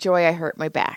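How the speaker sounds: ordinary talk, nothing marked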